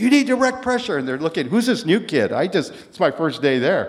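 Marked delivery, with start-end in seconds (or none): 0.0-1.0 yelling, pitched very high. Telling about a first day there, yelling at the guys, retelling a yell. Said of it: "and I'm yelling at the guys".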